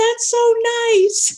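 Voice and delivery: very high shout. Retelling how a woman across the store called out: imitating someone yelling. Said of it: "a woman across the, the convenience store yelled".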